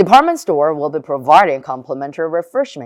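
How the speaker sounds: fast, lazy slur, words chewed loosely together. Contrasting careful reading with conversational speech: lazy, slurred in one go. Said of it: "말을 씹어먹듯이 원큐로 그냥 대강 게으르게 말할 수 있어. ... 이런 식으로요".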